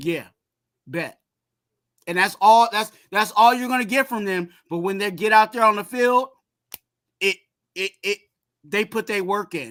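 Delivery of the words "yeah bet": mock flat deadpan tone, lower and quieter. Imitating guys who say little before games, imitating a flat, unexcited reply. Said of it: "They'll they'll be like".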